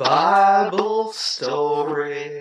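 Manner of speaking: very low, seductive, sultry drawl. Saying a phrase again because another speaker asked: sexy. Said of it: "but add a little sexy to it".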